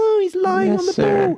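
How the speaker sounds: put-on very high, bratty, petulant schoolboy shriek. Retelling a player screaming for offside: imitating Pepper screaming like a petulant schoolboy. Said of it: "like a little s-, a f-, petulant schoolboy, was, like, screaming".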